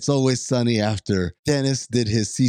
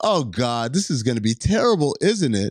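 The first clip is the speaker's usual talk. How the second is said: usual speaking voice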